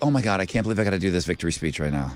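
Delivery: acted pained, grudging, agonized reluctance. Imitating a contestant dreading a victory speech: imitating a pained reluctant tone. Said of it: "She sounds like it's so painful".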